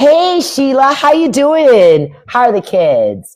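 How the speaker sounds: put-on high, slow, nasal office voice. Imitating greeting a coworker at work: put-on office voice. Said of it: "code switching".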